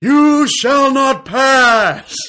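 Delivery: shrill booming wizard shout, pass stretched out. Doing the show's impressions segment for listeners, bad Gandalf impression. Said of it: "he's going to be Gandalf the Wizard".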